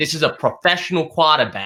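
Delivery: put-on Boston accent in a mob boss voice. Quoting Dave Gettleman's first comments on picking Daniel Jones, Bostonian mafia boss accent. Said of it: "in his little Bostonian mafia boss accent".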